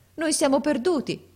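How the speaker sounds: frightened, high, alarmed outcry. A surprised wife cries out to her husband Abu Hassan: exclaiming. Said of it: "esclamò essa".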